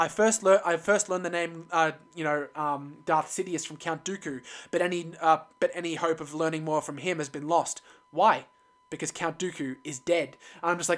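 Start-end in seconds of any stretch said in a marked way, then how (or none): none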